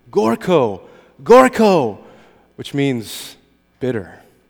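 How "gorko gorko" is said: festive shout, high in pitch and loud. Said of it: "they are shouting".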